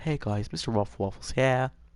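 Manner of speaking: voice turned light. Saying someone's voice went the wrong way with age: Ruffle Waffles impression. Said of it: "Ruffle Waffles hit puberty backwards".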